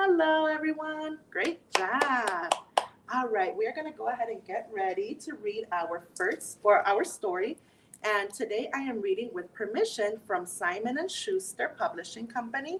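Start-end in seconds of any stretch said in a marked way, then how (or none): 0.0-1.2 kind, sweet, extra-nice, higher-pitched tone. Leading the audience in a greeting before reading a story, saying hello as nicely as possible. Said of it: "Let's say hello as nice as we can".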